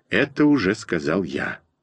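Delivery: plain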